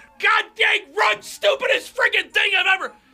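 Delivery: angry, furious ranting delivery. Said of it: "I completely lost it".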